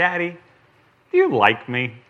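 put-on sweetest angelic little-girl voice, sing-song. A father retells his girl looking up at him to ask: imitating Catherine's sweetest voice. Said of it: "in the sweetest voice I've ever heard".

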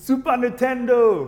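put-on screaming loudly in a Nigerian accent. Retelling his mom coming out of the room with a gift, imitating mom's Nigerian-accent scream. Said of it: "with her Nigerian accent".

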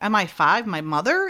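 normal talking voice

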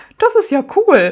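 loud, high voice while laughing. Recounting how a man mimicked the speaker's own way of speaking: retelling him laughing while mimicking. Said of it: "er lachte so und sagte".

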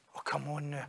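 very soft, quiet, fed-up, exasperated disbelief. Showing how a phrase tells it's not the first time he's said it, exasperated. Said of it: "See if we say it like this".

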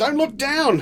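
yelled, pitched very high. Oscar calls to the others as they crawl through the air; yelled. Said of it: "yelled Oscar".

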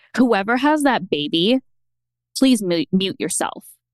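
ordinary talk, nothing marked

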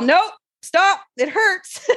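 mock urgent, high, pained yell. Recounting a painful moment with a partner, retelling a yell. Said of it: "I started to yell".

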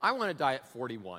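put-on deadpan. Retelling a woman's reply after hearing someone's age, imitating a deadpan reply. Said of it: "She just looks deadpan and she goes".

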